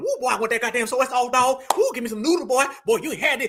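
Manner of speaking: acted giddy over-eagerness. Mocking people who get overexcited about Chinese food: imitating over-eager excited people. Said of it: "bringing out the tap dance".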